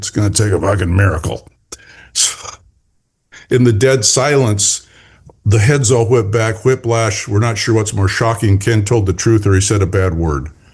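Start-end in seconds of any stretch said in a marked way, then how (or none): 0.0-1.5 put-on muttered voice, lower pitch. Retelling the divisional president's remark at a meeting: imitating Ken Bertuccini muttering under his breath. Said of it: "mutters under his breath".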